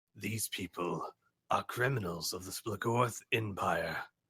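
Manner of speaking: fast, raspy, rough-edged announcer voice. Narrating a scene as pictures fly past, deliver the line in a raspy voice. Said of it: "not a smooth voice this time, but a more raspy voice".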